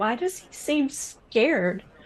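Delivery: put-on, hushed, in-character half-whisper. Playing a character who half-whispers a question to a companion: half-whispering in character. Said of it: "whisper to Kazkaya".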